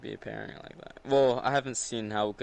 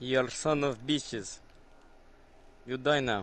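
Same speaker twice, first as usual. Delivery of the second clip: weird put-on Russian accent; 2 semitones higher than usual. Playing a multiplayer game with friends, weird Russian accent. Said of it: "why do you talk in that weird Russian accent".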